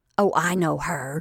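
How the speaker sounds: slightly scornful tone. Lottie hears the girl's name, Joan Brooks, and recognizes it, with slight scorn. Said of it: "with an accent of slight scorn".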